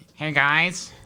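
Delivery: very heavily nasal voice. Imitating a friend's greeting: imitating Tommy's nasal voice. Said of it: "Very nasally".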